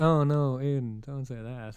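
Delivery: slow, sarcastic, insincere sympathy. Retelling a remark made on a call: retelling own sarcastic remark. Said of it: "and I sarcastically said".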